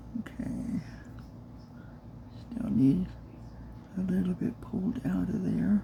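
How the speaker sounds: soft, quiet, near-whispered speech.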